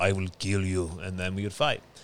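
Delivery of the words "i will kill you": put-on Russian accent. Retelling a childhood game, quoting the brother playing the Russian: imitating Justin playing the Russian. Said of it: "Justin was the Russian, and he'd be like".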